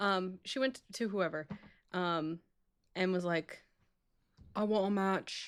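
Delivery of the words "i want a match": poorly done put-on British accent. Retelling what a woman said when asking for a match: bad british accent. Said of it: "I can't do an Australian accent, so I, I went for British".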